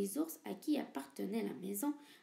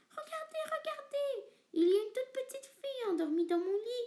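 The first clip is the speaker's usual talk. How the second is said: put-on tiny, squeaky, very high baby voice crying out; 12 semitones higher, 4 dB louder than usual. Narrator reading a bears' fairy tale, voicing baby bear crying out. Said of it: "cria bébé ours".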